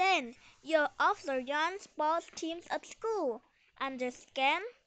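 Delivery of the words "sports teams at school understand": ordinary delivery, nothing marked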